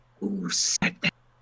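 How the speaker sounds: hissed speech. Narrating a character frantically looking around for the voice: hissing. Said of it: "And he hisses after you finish".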